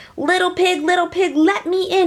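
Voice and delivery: high growling voice. Reading a story, the wolf at the little pig's door: growling Big Bad Wolf. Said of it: "he growled".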